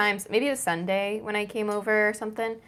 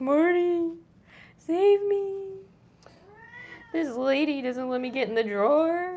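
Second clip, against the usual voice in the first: high-pitched put-on dog voice; 8 semitones higher than usual. Voicing the dog telling on its owner to marty: voicing the dog. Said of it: "She's like".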